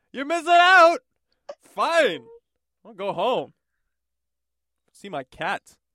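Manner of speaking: very loud, high-pitched, woeful, sad and lonely. Joking about the lonely man at the bar, acting out his words: imitating a sad, lonely man. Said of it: "the last words of the sad, lonely man".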